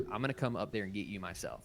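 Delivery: sounds angry. Retelling Obi-Wan ordering Anakin back, imitating an angry Obi-Wan. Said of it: "very clearly pissed".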